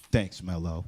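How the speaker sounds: put-on cool delivery. Retelling own reply after a dramatic pause: imitating own cool reply. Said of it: "Did you see the head nod?".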